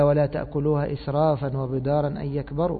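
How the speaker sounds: normal talking voice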